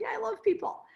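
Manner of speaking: tearful laugh through sobs. Retelling a flight attendant's reply, imitating crying and laughing. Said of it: "She's like crying and laughing".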